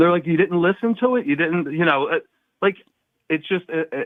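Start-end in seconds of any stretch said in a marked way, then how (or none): none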